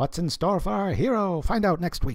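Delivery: vintage announcer delivery. Imitating the old Batman sayings: old-timey Batman announcer voice. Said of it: "those old announcy, old-timey voices".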